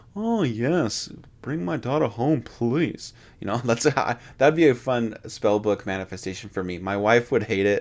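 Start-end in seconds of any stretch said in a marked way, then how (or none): 0.2-3.2 put-on, pitched-up dad voice. Picturing a spellbook voice from a film scene, Cameron's impression of Sloane's dad. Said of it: "impersonation of Sloane's dad from Ferris Bueller's Day Off when Cameron says".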